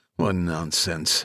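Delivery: disapprovingly. A character reacts to counselors and medics arriving on site; disapproving. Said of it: "Harrison said disapprovingly".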